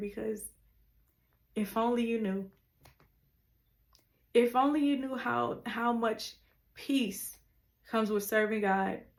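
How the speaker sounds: emotional, choked voice. Preaching to listeners about the peace of serving god, getting emotional. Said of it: "I'm just getting emotional just thinking about it".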